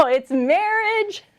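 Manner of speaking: high, slow, stretched-out build-up with growing enthusiasm.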